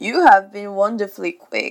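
spitefully, vindictively polite. Reading the father retorting to Wendy, vindictive politeness. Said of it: "with a vindictive politeness".

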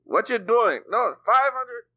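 put-on Jamaican accent. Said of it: "Sorry for my bad Jamaican accent".

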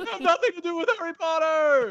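yelling rant, very high-pitched. Answering a request to do Jerry Seinfeld yelling about Kermit: Jerry Seinfeld yelling. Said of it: "Jerry Seinfeld yelling about Kermit".

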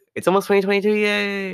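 voice leaps right up to very high pitch. Announcing that it's almost the new year: voice going super high-pitched. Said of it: "my voice went super high-pitched for a second".

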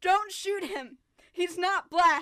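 mock yell, loud and high.

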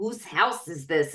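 put-on Queens accent, dropped very low. Recalling the mover in a movie's final scene, Queens accent. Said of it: "in his fucking Queens accent".

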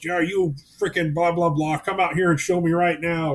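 put-on casual, challenging yelling. Mocking ghost hunters who are out there yelling at the ghost: imitating someone yelling at a ghost. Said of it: "out there yelling at the ghost".

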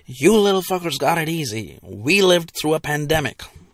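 over-the-top, very dramatic, grandiose storyteller delivery. Pretending to tell future kids about the pandemic: very dramatic voice. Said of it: "in a very dramatic voice".

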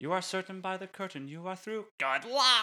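very high-pitched, Broadway-style delivery. Quoting a Broadway line as a joke: Nathan Lane impression. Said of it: "That was my Nathan Lane impression".

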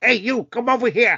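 put-on 1930s American gangster film accent. Teasing someone about their generic accent, mimic it in a 1930s American gangster film accent. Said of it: "You're like from a 1930s American gangster film".

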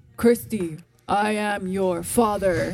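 low, deep fatherly voice, slow and drawn out. Imitating her dad's deep voice when asked to talk like him. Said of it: "Try to talk like him".

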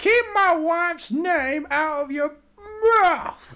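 very high-pitched voice, loud and slow. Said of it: "doing [name] whilst using [name]'s words".

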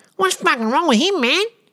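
very high, strange, deaf-sounding bogan voice. Telling a story, recalling a deaf man reacting to someone; Glennie's weird bogan deaf voice. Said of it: "in his weird bogan deaf voice".

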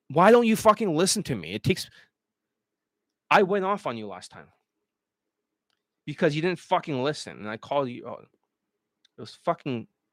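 heated, worked-up emotional outburst. Speaker venting at a student who did not listen to him, emotional. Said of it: "I'm just a little bit emotional right now".

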